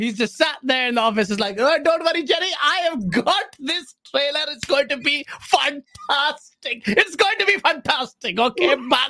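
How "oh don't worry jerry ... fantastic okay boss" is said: put-on Pakistani accent, pitched higher. Acting out someone in an office promising a trailer: imitating a Pakistani accent. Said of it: "Some Pakistani guy, I'm Pakistani, I can make this joke".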